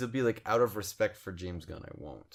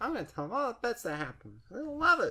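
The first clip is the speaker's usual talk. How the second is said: high-pitched, mocking impression of a voice. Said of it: "Is that your Kane impression?".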